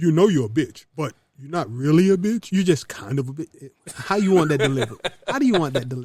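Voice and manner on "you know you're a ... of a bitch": put-on blunt voice, lower and louder. Delivering a harsh truth to women the way Derek Jackson would say it. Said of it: "Maybe if I say it like Derek Jackson would say it".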